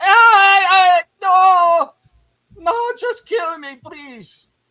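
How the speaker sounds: shrill, booming, slow, very high drawn-out begging scream. Narrating a cry the listeners hear echoing in the sewers, high-pitched scream. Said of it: "you hear a high pitched scream".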